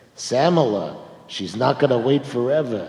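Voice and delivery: put-on Brooklyn accent on every word. Retelling what Anne told Sam about proposing: Anne's Brooklyn accent. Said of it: "with that Brooklyn accent".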